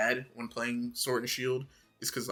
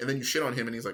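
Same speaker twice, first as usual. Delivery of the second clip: ordinary delivery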